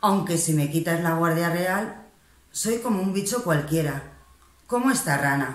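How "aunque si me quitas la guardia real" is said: plain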